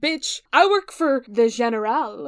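fake French accent, slow and drawn out. Quoting Percy's line from a book, tried in a put-on French accent. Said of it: "I tried to say it in a French accent".

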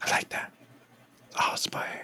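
soft, voiceless whisper. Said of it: "Why am I whispering?".

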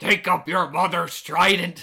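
loud, slow, drawn-out bellowing pirate voice. Quoting a film line, slight Willem Dafoe pirate voice. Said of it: "Willem Dafoe kinda has a little bit of a pirate voice".

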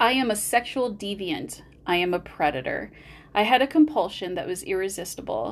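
ordinary delivery

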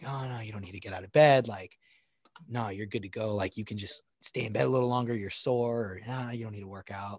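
put-on lazy voice. Acting out the inner voice that says to stay in bed: voicing the inner bitch voice. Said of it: "that bitch voice inside of us that's saying".

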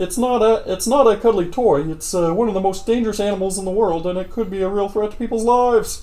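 put-on puppet frog voice. Reading a news article aloud to co-hosts, as suggested, in a Kermit the Frog voice. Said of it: "Should I read it like Kermit the Frog?".

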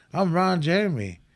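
ordinary talk

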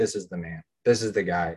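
plain

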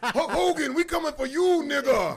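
very loud, high-pitched yell. Joking that a friend sounds like a wrestler calling someone out: Booker T voice. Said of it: "he sound like Booker T when he called Hulk Hogan".

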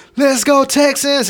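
mock excited cheer. Retelling cheering at a Texans game: imitating a hyped cheer. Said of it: "so I'm hyped".

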